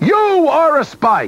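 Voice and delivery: very high-pitched, slow, drawn-out exclaiming. The emperor rushes up to a stranger, exclaiming.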